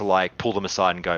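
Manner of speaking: ordinary talk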